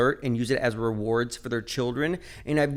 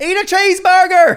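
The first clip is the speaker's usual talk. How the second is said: put-on very high, very loud yell in southern accent; 14 dB louder than usual. Retelling what someone driving by said to them, imitating a southern accent. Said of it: "in a southern accent".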